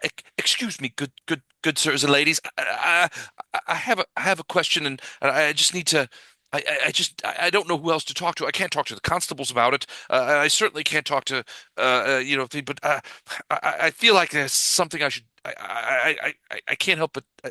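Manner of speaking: nervous, agitated woman stammering, stumbling, interrupting herself. Voicing a nervous local woman approaching the party's table: nervous agitated woman. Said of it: "she seems nervous, agitated".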